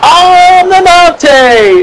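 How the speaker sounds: put-on very high wrestler-style shouted cheer. Describing an old wrestling gimmick, speaker does its catchphrase: cheering like the Mountie. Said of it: "this badass is cheering".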